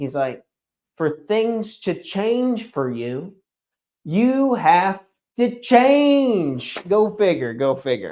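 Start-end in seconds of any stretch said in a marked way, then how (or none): 1.0-6.8 high, slow, lifting inflection, "change" stretched out. Quoting a favourite speaker's line on change: Jim Rohn high inflection voice. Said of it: "in his high inflection voice".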